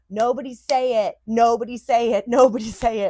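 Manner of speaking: very loud, high, repeated screaming. Recalling the moment of giving birth, re-enacting her screaming. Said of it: "I was screaming".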